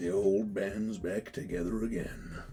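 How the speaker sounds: put-on low, very hushed, very soft old man voice. Narrating a scene where several voices chime in, one in an old man voice. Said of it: "along with a old man voice go".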